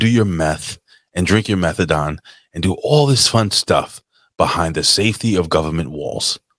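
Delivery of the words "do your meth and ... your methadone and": usual speaking voice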